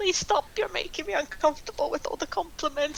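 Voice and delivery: uncomfortable, high, pleading voice.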